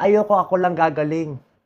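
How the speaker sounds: tearful voice, on the edge of crying. Speaking while tearing up. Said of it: "Naiiyak ako".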